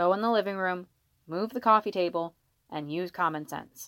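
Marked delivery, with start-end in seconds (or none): none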